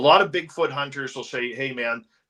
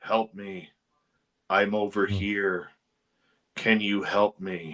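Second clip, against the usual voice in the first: flat, toneless monotone, lower and slower; 5 semitones lower than usual. Retelling a creature's voice calling from the trees, in a monotone voice. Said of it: "it was all monotone voice".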